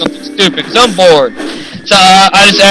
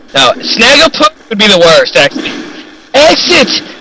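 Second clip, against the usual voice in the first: ordinary talk, nothing marked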